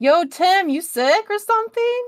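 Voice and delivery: very loud, high, shrill yell. Darcy, seeing how Tim looks, calls out to him very loudly. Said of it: "Like, very loudly".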